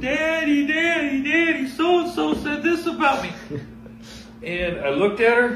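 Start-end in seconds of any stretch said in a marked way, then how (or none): 0.0-3.3 put-on crying scream of a girl, much higher. Acting out a little girl calling for her daddy, imitating a crying, screaming girl. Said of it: "Just crying, screaming".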